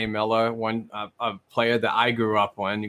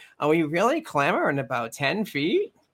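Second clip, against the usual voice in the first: slow, high, swooping, drawn-out sing-song rising line; 6 semitones higher than usual. Imitating the league commissioner shrugging off a rink size complaint: Gary Bettman impression. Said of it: "How was that, Bettman?".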